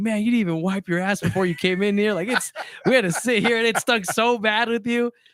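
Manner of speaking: put-on shrill, very high yelling. Retelling people in the bunker scolding the guy: imitating people yelling. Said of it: "yelling at him".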